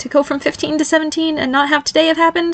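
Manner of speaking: very high, humourless, mirthless laughing voice. Asked by his father what he wants, Barry answers with a mirthless laugh. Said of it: "He laughed mirthlessly".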